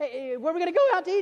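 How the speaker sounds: put-on acted-out, high, very excited child voice. Retelling a childhood road trip with his sister, acting out excited kids. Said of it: "we're like super pumped".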